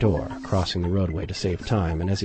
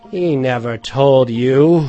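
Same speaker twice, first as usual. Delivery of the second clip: very loud, drawn-out cry of anger; 5 semitones higher, 10 dB louder than usual. Reading a story aloud, a character answers the lawyer with an angry cry. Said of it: "cried Mr. Hyde with a flush of anger".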